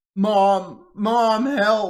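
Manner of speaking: put-on small child's voice, very high and loud. Acting out a voice calling out for help, in a little child's voice. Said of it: "but in a little child's voice".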